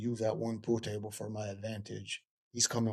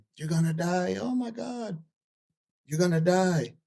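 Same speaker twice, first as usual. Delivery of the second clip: all-out high, loud screaming; 9 semitones higher, 7 dB louder than usual. Retelling what the ex screamed during a bar fight: imitating someone screaming. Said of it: "I hear my ex start screaming".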